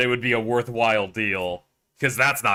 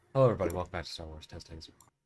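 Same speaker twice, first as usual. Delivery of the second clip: very hushed, low, calm public-radio host delivery; 5 semitones lower, 9 dB quieter than usual. Opening a Star Wars video as the narrator, in an NPR voice. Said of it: "N P R voice".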